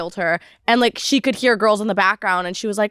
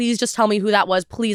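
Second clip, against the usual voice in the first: pleading, begging tone. Retelling how Catherine asked him in the car, acting out begging. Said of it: "like begging".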